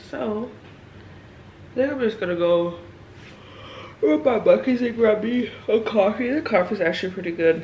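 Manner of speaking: yawning while talking. Tired on a workday morning, wanting a coffee: yawning while talking. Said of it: "I'm sorry I keep yawning".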